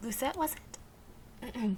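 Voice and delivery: soft voice, cracking and breaking at the end. A player greeting someone in the shop, voice cracking at the end. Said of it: "my voice just cracked at the end of that".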